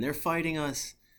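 all-out, high-pitched screaming. Retelling a radio call during a fight: imitating Sergeant Slavings screaming. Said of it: "just starts screaming".

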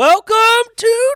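very loud, very high, shrill delivery. Opening the episode, then apologising: really loud. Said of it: "sorry, that was really loud".

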